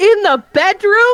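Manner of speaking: shrill, very loud, high-pitched shout. Showing how Ari will speak with her hands on the table, Ari really loud. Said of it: "really loud".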